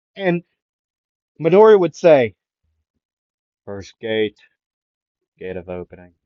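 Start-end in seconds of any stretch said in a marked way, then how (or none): 3.7-6.0 composed, calm, soft, hushed voice. Retelling a race scene, the speaker quotes Midori, in a put-on calm voice. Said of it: "like in a calm voice".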